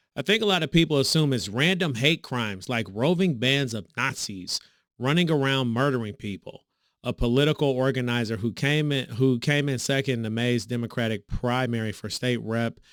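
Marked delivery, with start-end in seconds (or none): none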